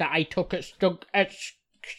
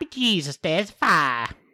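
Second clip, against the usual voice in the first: poor fake Mexican accent. Asked for their best one, trying an accent: bad Mexican accent. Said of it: "Do a Mexican like what".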